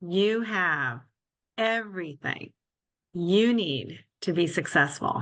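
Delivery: slow, halting, deliberate word-by-word emphasis. Answering the host's question on best career advice, said slowly. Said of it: "I'm going to say it slowly".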